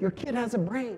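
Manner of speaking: high, proud announcing tone. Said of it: "they looked all proud".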